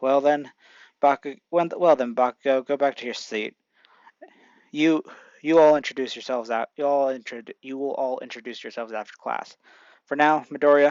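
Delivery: ordinary delivery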